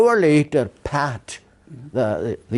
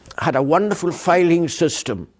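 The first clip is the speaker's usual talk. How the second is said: usual speaking voice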